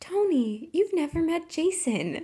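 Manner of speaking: creepy, high-pitched, slow and drawn-out. Retelling a TV scene where a character greets another: imitating a character's eerie tone. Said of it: "In that tone?".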